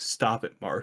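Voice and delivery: put-on quiet voice. Retelling the scene where Mark chokes Cecil, with Immortal quietly saying it. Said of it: "Immortal quietly going".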